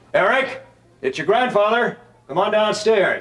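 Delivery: shouting. Calling Eric to come downstairs, as his grandfather: yelling upstairs. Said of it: "Would you stop yelling upstairs?".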